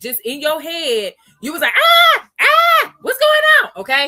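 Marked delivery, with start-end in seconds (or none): 1.7-3.8 shrill, very high, very loud, alarmed panicked yelp. Imitating a viewer panicking as the price drops: imitating panicked viewer. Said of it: "if you panic".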